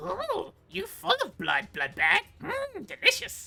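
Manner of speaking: very high, shrill, swooping little goblin voice. Voicing a goblin in a game as a player bleeds: goblin voice. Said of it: "in his goblin-y voice".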